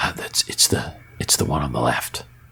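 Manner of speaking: small, tiny whispered voice. Voicing a small voice that whispers to them, small whispering voice. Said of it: "you hear a small voice whisper".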